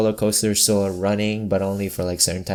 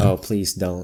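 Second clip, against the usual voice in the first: normal talking voice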